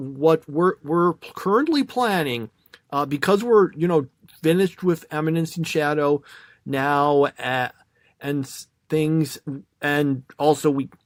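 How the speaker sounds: stammering, stumbling, halting start, tripping over words. Outlining plans after ranking this year's watched series, stammering. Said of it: "Sorry, I'm stammering".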